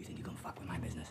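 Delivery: very low, hushed, menacing voice. Acting a scene opposite a cop, the speaker plays a character confronting him: threatening. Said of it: "Are you threatening me?".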